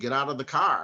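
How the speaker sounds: ordinary talk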